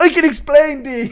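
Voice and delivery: very high-pitched, slow, stretched-out, caught-out tone. Acting out a requested bit about getting caught: Connor McGregor impression. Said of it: "Impression of Connor getting caught sending pics".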